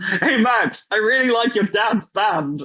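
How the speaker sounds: loud, high, drawn-out yell. Retelling a friend calling to someone at a merch stand: imitating a friend yelling loudly.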